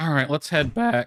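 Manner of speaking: voice breaks, cracking. Deciding to head back, voice cracking. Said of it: "my voice cracked".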